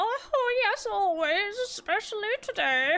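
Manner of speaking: put-on high-pitched elderly woman character voice. Voicing the old lady who arrives at the door, old lady voice. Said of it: "Old lady".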